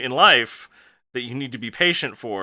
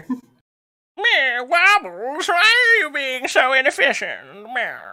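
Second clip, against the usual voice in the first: very high, fussy, odd grandmother voice, nagging tone; 12 semitones higher than usual. Streamer imagines viewers scolding her, scolding like a weird grandmother. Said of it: "Scolding you, kind of like a weird grandmother".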